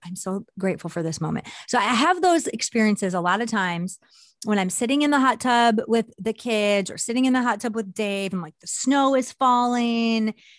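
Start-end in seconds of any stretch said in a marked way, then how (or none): 0.0-1.5 whispered under breath, quieter. Showing how she pauses in a moment of gratitude: whispered under breath. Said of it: "I like whisper almost under my breath".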